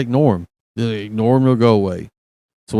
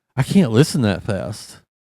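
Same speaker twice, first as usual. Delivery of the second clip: ordinary talk, nothing marked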